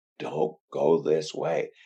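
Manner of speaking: whispered speech. As an oversoul watching a person down below, whispering. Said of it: "I'm whispering".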